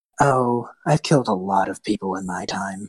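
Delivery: slow voice of an unseen, shadowy figure. Voicing a shadowy cloaked elven figure who speaks after a kill: voicing a shadowy elven figure. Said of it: "you actually see the shadow appear again and just go".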